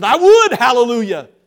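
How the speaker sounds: booming, hearty, boisterous, very loud outburst. Retelling a churchgoer's answer to an assistant's question: imitating a boisterous reply. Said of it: "in a very boisterous way".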